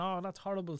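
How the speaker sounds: put-on sobbing, crying little kid voice. Retelling what a crying child said after a bite: imitating a crying child. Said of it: "he started crying, saying".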